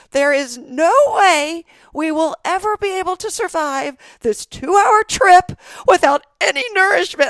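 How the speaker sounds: acted very high, loud, dramatic, panicked kid freakout. Retelling a son's complaint about the car trip: imitating a child freaking out. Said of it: "he is freaking out".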